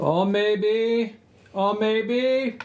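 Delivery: put-on high-pitched Jamaican-accented voice. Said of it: "you're hearing a Jamaican voice saying that".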